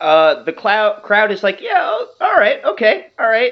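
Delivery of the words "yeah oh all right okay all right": very high, confused, half-hearted cheer. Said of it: "they seem to be confused at first".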